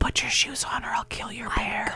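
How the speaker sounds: seething, hushed, angry whisper. Showing how Sally whispers when she's mad, doing Sally's angry whisper impression. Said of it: "like Sally whispers when she's mad".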